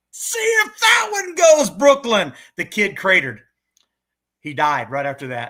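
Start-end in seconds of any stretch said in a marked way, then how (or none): 0.2-2.3 acted shrill, very high, loud, drawn-out top-of-the-lungs yell. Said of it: "yelling at the top of my lungs".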